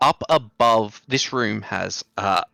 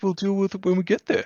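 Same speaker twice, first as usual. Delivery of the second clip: very high, dismissive, mocking put-on voice; 11 semitones higher than usual. Quoting how the others responded earlier, the speaker is mock-imitating the others. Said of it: "Why did you make that voice for us? We were being reasonable, nice people".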